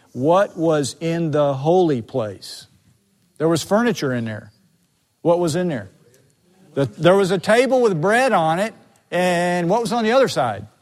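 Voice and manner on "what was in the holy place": slow, low, unhurried, deliberate, carefully spaced delivery. Speaker explaining the holy place repeats a question to listeners, said slowly. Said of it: "Let me say that slowly".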